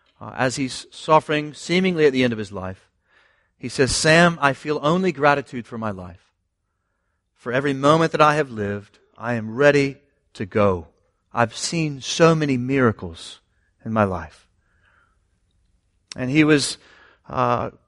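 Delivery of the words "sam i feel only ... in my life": imitated whisper. Retelling a dying man's words to his friend: imitating a whisper. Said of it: "just whispers to him".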